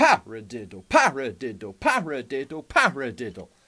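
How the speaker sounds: stress on first syllable pa.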